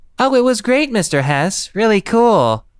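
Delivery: weird, very high, sing-song, sugary put-on voice. Reading a story aloud, voicing a girl answering a parent: weird sweet put-on voice. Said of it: "She's using that weird, sweet voice she puts on for my parents".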